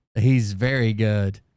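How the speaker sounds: ordinary talk, nothing marked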